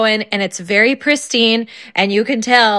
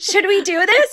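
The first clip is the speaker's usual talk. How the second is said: put-on eager, excited child voice; 10 semitones higher than usual. Retelling a son's question to his brother: imitating a kid saying it excitedly. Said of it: "he said it like he was excited".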